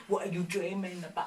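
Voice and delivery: put-on soft British accent. Speaker describing a movie man's intense gaze, quoting his line in a british accent. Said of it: "talking in his British accent".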